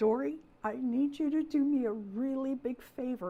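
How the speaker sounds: mock weepy, tearful crying voice. Retelling calling Dory back: retelling own crying. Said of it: "and I'm crying".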